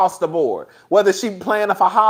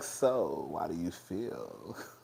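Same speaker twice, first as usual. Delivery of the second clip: very low, creaky, soft, slow sultry drawl; 20 dB quieter than usual. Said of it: "trying to have this sexy, sensual voice".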